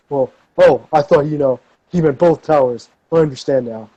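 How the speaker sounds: taunting, mocking tone. Retelling a man's reply in front of an auditorium crowd, in a mocking voice. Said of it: "he does in his mocking voice".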